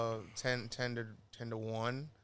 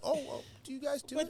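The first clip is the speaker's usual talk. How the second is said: very high, feigned innocent, pretend-naive tone. Showing how to ask about military discounts: pretending an innocent question. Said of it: "but you have to pretend".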